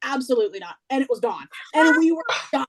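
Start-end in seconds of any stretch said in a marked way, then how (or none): 0.0-0.8 mock flat, deadpan voice. Retelling how the bartender refused: imitating a deadpan bartender. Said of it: "Shutting it down".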